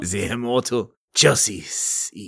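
put-on French accent. Introducing the lovebirds by name, in a French accent. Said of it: "say their names with a French accent".

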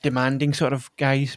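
ordinary talk, nothing marked

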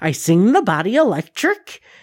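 very high, swooping, horrifying evil-witch voice. Trying to imitate a very high-pitched sound, very high-pitched witch-like voice. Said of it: "that very high pitched, I'm going to try to imitate it here".

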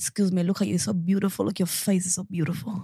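male voice in a put-on Nigerian accent. Retelling what a man said on the way to the station: imitating a nigerian accent. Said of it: "Why the accent? He was Nigerian".

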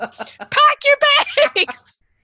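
very high, loud screaming in chipmunk voice. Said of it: "screaming to his chipmunk friends".

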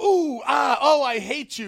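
shrill, booming, very high, drawn-out jeering grandmother voice. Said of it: "that's how my, my grandmother used to react".

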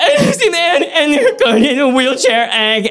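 mock blubbering sob-talk, very high and swooping. Retelling a phone call made while sobbing, imitating his own full-on sobbing. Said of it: "full-on sob".

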